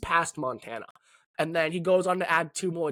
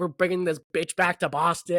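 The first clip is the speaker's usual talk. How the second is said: ordinary talk, nothing marked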